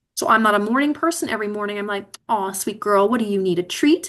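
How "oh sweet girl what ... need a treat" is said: sweet, doting puppy-talk voice. Retelling how she talks to herself every morning, talking like to a little puppy. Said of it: "talk to myself like a little puppy".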